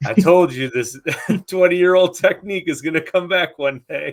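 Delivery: put-on laughing, taunting. Imitating an angler laughing at others who missed the shallow fish: imitating a laughing angler. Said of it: "And the guy's laughing".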